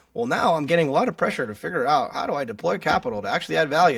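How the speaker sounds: mock nerdy speaking voice. Imitating sustainability people on panels, in a nerdy sustainability voice. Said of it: "doing this nerdy sustainability voice".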